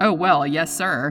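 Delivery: dry delivery. Replying over the radio to a man screaming for a chopper, dry. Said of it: "Parker said dryly".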